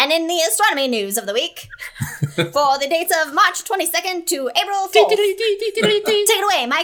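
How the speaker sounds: booming vintage announcer call, loud and high. Asked by a co-host, the speaker introduces the astronomy news in an old-timey voice. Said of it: "you should introduce that in the old-timey voice".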